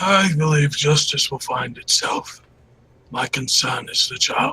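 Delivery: put-on elderly old man character voice. In a game, an old man answers a question about justice: old man character voice. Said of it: "A mile's walk for an old man does seem a long / A mile's walk for an old man does seem a long / Just an old man playing with his granddaughter".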